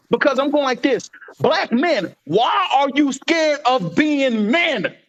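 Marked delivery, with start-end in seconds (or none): 1.4-4.9 exasperated, slow, deliberate, frustrated voice. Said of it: "I am yelling because I'm frustrated".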